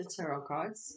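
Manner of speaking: plain reading voice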